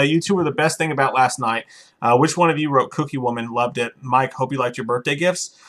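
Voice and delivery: normal talking voice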